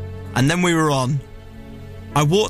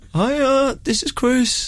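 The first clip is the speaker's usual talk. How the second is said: put-on character voice, much higher; 10 semitones higher than usual. Showing the voice used in a Hyacinth Bouquet play: Hyacinth Bouquet voice. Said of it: "do your 15 voice when you're 15".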